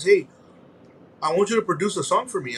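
plain

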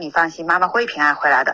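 ordinary delivery

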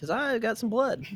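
very high recruiter-style voice. Acting out Rod recruiting a kid into a vampire group: imitating Rod recruiting. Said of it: "Rod just appears out of nowhere telling a kid".

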